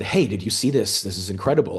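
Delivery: ordinary delivery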